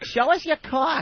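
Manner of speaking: put-on very high, drawn-out, horrendous Massachusetts accent. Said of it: "it was the horrendous Massachusetts accent".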